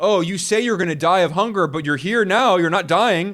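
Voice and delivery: normal talking voice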